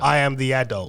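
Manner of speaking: put-on irritated voice. Retelling what was said to a daughter who spoke with attitude: retelling own annoyed words. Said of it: "Dad's annoyed".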